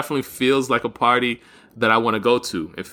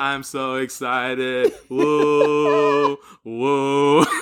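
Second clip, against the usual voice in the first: flat, deadpan, emotionless fake party excitement; 2 semitones higher than usual. Acting out how the girls with the sparklers came out: imitating flat, emotionless excitement. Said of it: "the girls come out with the sparklers with no emotion".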